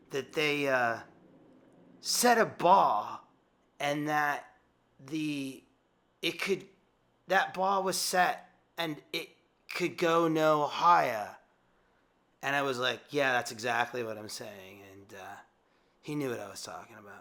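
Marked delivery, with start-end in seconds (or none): 0.1-11.2 bad put-on British accent, slow. Quoting a man's question, speaker puts on a bad British accent. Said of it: "excuse my British accent, bad one".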